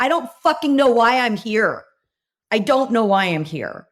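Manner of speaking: put-on high, lost, overwhelmed meltdown voice. Retelling a massive meltdown in front of a hundred people: reenacting a meltdown. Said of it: "I literally had a massive meltdown".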